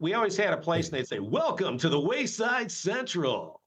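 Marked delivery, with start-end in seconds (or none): 1.2-3.5 slow, swooping radio DJ voice like a countdown host. Imitating a DJ greeting at a place: Casey Kasem DJ voice. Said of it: "He does a good Casey Kasem".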